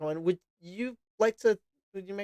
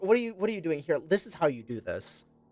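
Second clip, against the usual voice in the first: teasing, sarcastic, mocking tone. Voicing a character who helps another through bandaging wounds: sarcastic. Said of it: "with that kind of sarcastic".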